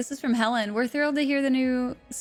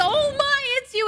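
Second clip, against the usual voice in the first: mock shocked tone, higher; 13 semitones higher, 4 dB louder than usual. Mocking what someone says on entering during a murder inspection: imitating a shocked voice. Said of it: "in a shocked fucking voice".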